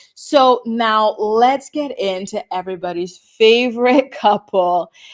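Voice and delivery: heavy sarcasm, loud and slow. Introducing the next couple in a recap: sarcastic tone. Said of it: "the sarcasm in my voice there".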